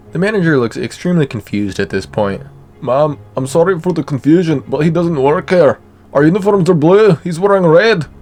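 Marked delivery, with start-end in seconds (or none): 2.8-8.1 put-on Scottish accent, much higher. Voicing the manager replying to a woman, in a Scottish accent. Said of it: "I gave the manager a Scottish accent".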